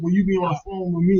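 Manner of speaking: plain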